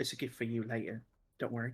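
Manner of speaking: soft, hushed half-whisper under the breath. In a role-play, she answers the other character's question, half-whispering. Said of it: "She whispers".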